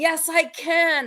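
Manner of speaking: acted, high, straining yell. Retelling working out outside, pushing her hardest: retelling a yell. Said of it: "I'm yelling".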